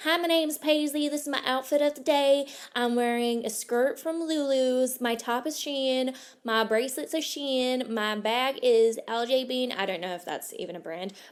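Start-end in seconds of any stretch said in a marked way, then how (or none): 0.0-9.7 best put-on American accent. Speaker showing how she slips into her best american accent. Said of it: "talking in my best American accent".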